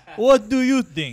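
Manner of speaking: mock sarcastic Romanian voice. Doing a classic Romanian sarcasm bit: imitating sarcastic Romanian bit. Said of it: "That classic Romanian bit".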